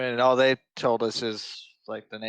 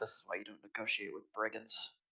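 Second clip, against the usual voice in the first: barely audible, hushed mutter under the breath; 2 semitones lower, 11 dB quieter than usual. In character at the game table, Drusus muttering under breath. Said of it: "mutters under his breath".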